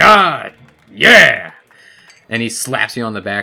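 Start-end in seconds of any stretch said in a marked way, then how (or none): 0.0-1.5 very loud, booming, laughing exclamation. Narrating a character who leans back and slaps you on the back, booming laughter. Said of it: "he leans back in a booming laughter".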